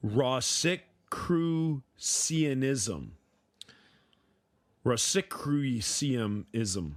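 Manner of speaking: very slow, deliberate pronunciation. Attempting to pronounce an unfamiliar word, saying it really slowly. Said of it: "I'm gonna try and say it really slowly".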